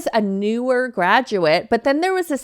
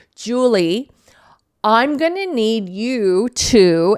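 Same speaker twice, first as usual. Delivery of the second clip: mock, very slow, deliberate, condescending drawl. Retelling how a coworker assigned tasks in meetings: imitating a condescending coworker. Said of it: "on purpose in such a condescending way".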